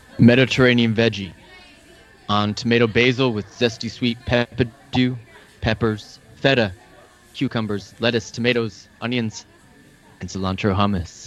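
deep imitated movie-hero voice.

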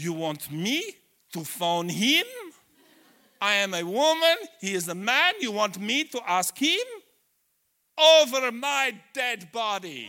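put-on very loud, high-pitched Romanian accent. Retelling a missionary's reply, speak it in her Romanian accent. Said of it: "in her lovely Romanian accent".

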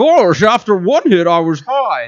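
put-on cartoonish dog voice, high and swooping. Asked for a dog voice, a speaker tries one out: cartoon dog voice. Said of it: "give me what somebody thinks is a dog voice".

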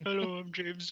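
bad, muffled, mouth-full-of-rocks voice. Imitating a co-worker who sounds like he has rocks in his mouth: terrible James impression. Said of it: "that's a terrible impression".

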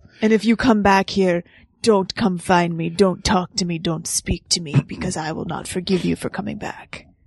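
put-on French accent. Speaker quotes Alfredo's parting words from a film scene, French-accented Alfredo impression. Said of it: "my french accent".

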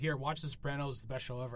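ordinary talk, nothing marked

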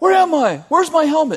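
very high, loud yelling. Retelling Johnny waking from a coma in hospital: imitating Johnny yelling. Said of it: "He starts yelling".

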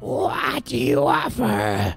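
harsh scratchy voice. Narrator voicing a woman who grabs a player's coat, in a horrid scratchy voice. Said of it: "in a horrid scratchy voice says".

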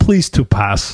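playacted, fake put-on Russian accent. Player in a group game who announced a character accent, Russian accent. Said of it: "I'm going to do a Russian accent".

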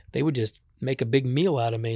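plain

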